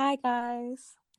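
youthful, high voice. Greeting listeners at the start of a podcast: young-sounding voice. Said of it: "You sound so young there".

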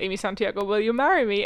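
ordinary talk

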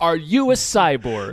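sincere, unhurried tone.

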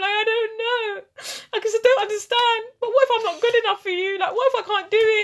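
very high, tearful, weepy and unsure crying voice. Retelling what she said to him while lying there, acting out crying, insecure. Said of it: "I started crying".

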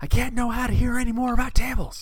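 put-on shrill, high, loud yell. Quoting a comedy sketch line: imitating a sketch character yelling. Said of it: "there's one sketch where he just yells".

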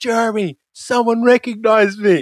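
shrill, excited, very high, drawn-out shout. Retelling a crowded hillside moment with the hosts, imitating Turtle yelling. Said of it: "Turtle just yells".

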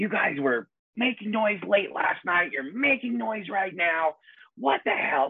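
very high, shrill screeching scream. Retelling how a woman screamed at the stage manager: imitating a woman screaming. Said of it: "she just starts screaming at our stage manager".

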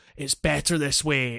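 plain

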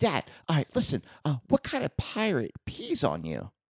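put-on squeaky, high, swooping young boy's voice. Retelling his kid telling him a joke, imitating kid's high-pitched voice. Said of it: "so he still has that high pitched voice".

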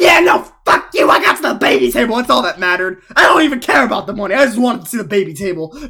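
loud, defiant yell, nothing held back. Imagining winning and yelling at the live feeder: acting out a yell. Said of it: "I just yelled at the live feeder".

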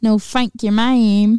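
put-on British accent. Repeating the other speaker's line for fun: British accent. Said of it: "stuck on that British accent".

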